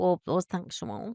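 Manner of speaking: quiet, unhurried put-on voice.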